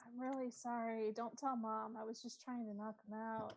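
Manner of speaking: soft, hushed half-whisper. Half-whispering an apology in character to an unconscious captive: half-whispering. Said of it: "I'm gonna whisper it to hear".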